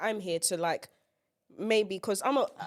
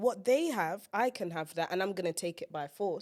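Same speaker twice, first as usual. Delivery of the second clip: usual speaking voice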